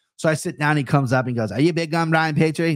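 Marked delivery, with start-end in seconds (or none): 1.5-2.8 eager voice in a put-on English accent. Retelling an English guy coming up to him after recognizing him, put-on English accent. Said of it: "That's my English accent".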